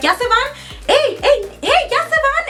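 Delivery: mocking, high, called-out voice.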